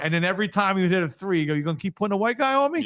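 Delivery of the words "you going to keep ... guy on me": high, angry, pissed-off tone. Retelling a player taunting after every three he hit: imitating a pissed-off player. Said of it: "He was completely pissed off".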